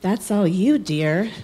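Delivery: acted icy, unfeeling voice, slow and cold. Quoting the OBGYN's reply about the weight, mimicking a cold, heartless voice. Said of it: "in her cold, heartless voice".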